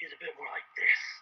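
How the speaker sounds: low, calm, almost whispered villain voice. Showing how they described their own villain's voice, low, calm Megatron-style villain. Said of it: "Low, calm, knows exactly what he's doing".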